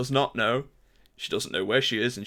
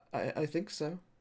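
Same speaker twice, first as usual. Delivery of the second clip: very soft, high, hushed, put-on fabulous girly voice; 5 semitones higher, 10 dB quieter than usual. Voicing a frightened little girl answering a question: fabulous girl voice. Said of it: "Fabulous girl voice".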